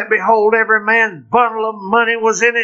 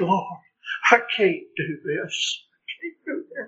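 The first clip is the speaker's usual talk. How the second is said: acted-out mock crying, quieter; 9 dB quieter than usual. Addressing listeners about loss, the speaker voices their prayer, acting out crying. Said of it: "all you can do is cry and say".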